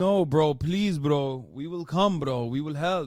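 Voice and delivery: clumsy, bad, put-on Indian accent. Mocking how indian accounts online respond, bad fake indian accent.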